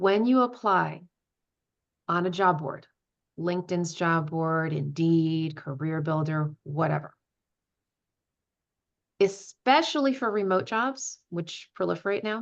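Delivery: slowed-down delivery. Repeating job board advice to the audience, this time slower; speaking slower. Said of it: "I'm going to say it slower this time".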